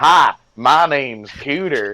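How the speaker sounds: over-the-top hillbilly Southern accent. Explaining how he gets into the accent, the speaker demonstrates a super hick Southern accent. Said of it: "like super hick Southern accent".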